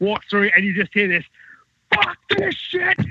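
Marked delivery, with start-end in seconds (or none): 1.9-3.0 furious Scottish outburst, very high pitched. Retelling a wrestler's outburst backstage after a match: imitating Drew's furious Scottish outburst. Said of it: "In his Scottish accent".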